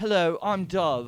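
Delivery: put-on English accent. Acting out a character introducing herself: put-on English accent. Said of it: "my English accent".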